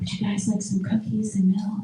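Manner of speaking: quiet, hushed whisper. Retelling a friend's mom offering cookies: imitating someone whispering. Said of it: "Why is your mom whispering?".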